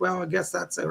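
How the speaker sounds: ordinary delivery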